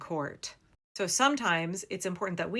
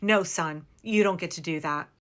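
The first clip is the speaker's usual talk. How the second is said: commanding, authoritative mother voice, louder; 4 dB louder than usual. Showing how to tell law enforcement to stop: authoritative mom voice. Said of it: "having your mom voice on, speaking authoritatively".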